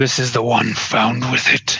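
rough, grating, gruff, gravelly rasp. Game narrator voicing a man inspecting captives, gruff, gravelly voice. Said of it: "A gruff, gravelly voice coming from the man says".

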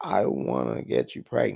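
whispered close, pitched very low. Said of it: "I whispered in there".

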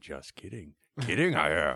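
low, kooky, slightly unhinged hermit voice. A podcaster retells a character's first meeting with Luke, imitating a crazy hermit. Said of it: "like a crazy person when he first met".

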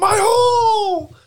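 very high shriek, "hole" stretched long. Retelling how a wrestler got hurt in a match: imitating Nia Jax screaming. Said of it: "just screams".

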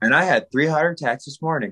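ordinary delivery

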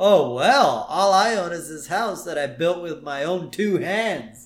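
dripping, exaggerated acted sarcasm, swooping sing-song. Retelling a scene where a character replies to Homer: mock-sarcastic. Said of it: "And he's all sarcastic".

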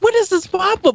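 put-on very shrill, high, frustrated, exasperated yelling. Retelling reacting to the frame rate dropping while Jesse giggled, retelling a yell. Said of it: "And I'm just yelling".

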